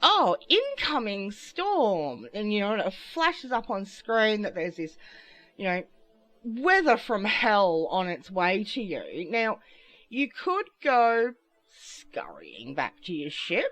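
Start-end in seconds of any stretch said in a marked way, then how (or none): 0.0-2.3 swooping game AI announcer voice, "storm" drawn out. Speaker describes a storm warning in a game, imitating the game's AI voice. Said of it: "A I voice goes".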